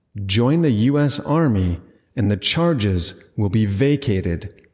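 ordinary talk

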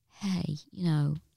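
imitated condescending voice. A comedian mimicking how people talk to you, in a mock patronising tone. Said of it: "that patronising tone of like".

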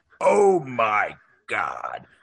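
animated exclamation, pitch swooping all over. Picturing a movie reaction, imitating Chris Farley. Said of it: "I picture Chris Farley".

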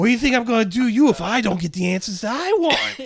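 very high-pitched, very loud, menacing voice. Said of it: "threatening, threatening".

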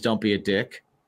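ordinary talk, nothing marked

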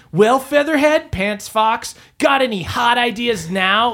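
cocky, high-pitched cartoon voice, tossed off. A player's character speaks to Featherhead and Fox during the game, Sonic voice. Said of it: "I'm getting Sonic voice".

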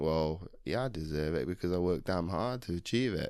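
ordinary talk

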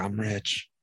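acted-out crying through the words, tearful sobbing. Retelling a movie scene where a man cries over gold bars: imitating someone crying. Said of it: "that guy is sitting there crying".

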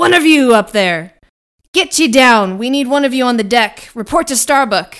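very loud, bellowed yelling at full volume. The narrator voices the captain ordering a player down from above, Captain Ahab yelling orders. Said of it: "yelling out orders".

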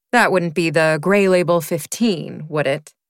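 ordinary delivery

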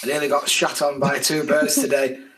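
ordinary delivery

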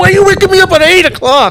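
high, shrill screaming protest. Retelling being woken at eight after a night shift: imitating his past screaming. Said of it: "He's screaming at me".

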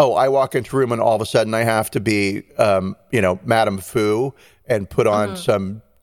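ordinary delivery

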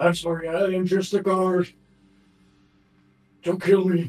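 cringing, cowering monster voice, high and begging. Voicing a badly hurt giant mimic cowering before the players: cowering mimic pleading.

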